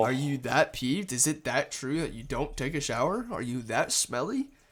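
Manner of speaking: plain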